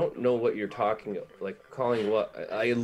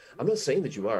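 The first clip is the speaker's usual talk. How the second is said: mock, put-on, defensive protesting tone; 3 semitones higher than usual. Quoting a woman's reply in an argument about Joe calling, mock-defensive. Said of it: "she gets like all like defensive".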